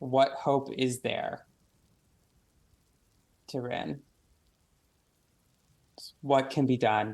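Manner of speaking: very guttural, otherworldly, celestial voice. Narrating a scene to the players as a figure turns and speaks: very guttural celestial voice. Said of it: "in a very guttural celestial".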